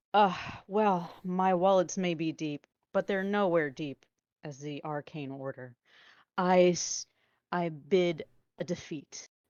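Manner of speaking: loud, sarcastic tone. Conceding an auction bid to the whole crowd: sarcastic. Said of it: "just very sarcastically out to the whole crowd".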